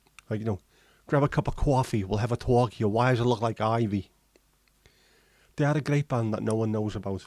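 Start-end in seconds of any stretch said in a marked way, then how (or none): 1.1-4.1 put-on New York accent throughout. Imagining how a line sounds, then saying it in a new york accent. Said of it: "a New York voice".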